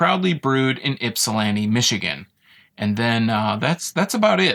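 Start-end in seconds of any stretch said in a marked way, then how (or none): none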